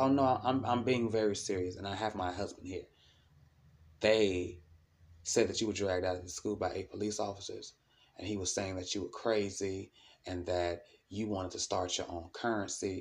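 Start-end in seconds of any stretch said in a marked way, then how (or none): none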